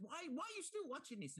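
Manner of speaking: put-on very high-pitched Colombian accent. Speaker quotes his wife from a story, in a colombian accent. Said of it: "In a beautiful, beautiful Colombian accent".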